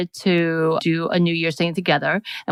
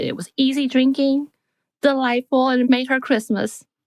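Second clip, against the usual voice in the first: put-on higher-pitched older woman's voice; 8 semitones higher than usual. Telling a listener what the mother said about the gift, imitating Irma's voice. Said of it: "I don't know why I made that voice".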